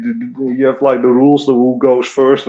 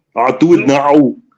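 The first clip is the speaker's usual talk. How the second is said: put-on Austrian action-hero accent; 2 semitones higher than usual. Answering a chat request to say the line: Arnold Schwarzenegger accent. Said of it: "That's a great accent".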